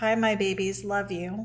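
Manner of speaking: ordinary talk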